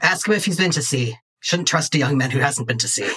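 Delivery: put-on old-fashioned sea captain character voice. In a game, arguing about getting a tote bag, as an 18th-century sea captain. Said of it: "I'm arguing with an 18th century sea captain about getting a tote bag from a concert largely attended by 12 year old".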